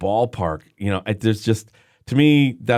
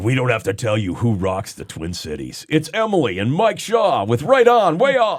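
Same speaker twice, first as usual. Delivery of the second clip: swooping, big-market radio announcer voice. A co-host offers to do a show intro: big-market radio voice guy. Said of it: "do you want me to do like my big market voice guy".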